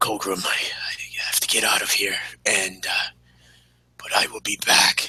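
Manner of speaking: whispered, apologetic, promising tone. A player, as his character, speaks to Colgrim before slipping away: Leo Frick's whispered apologetic promise. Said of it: "he whispers like this this um this like promise and um apology".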